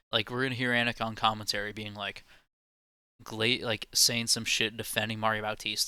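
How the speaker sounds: ordinary talk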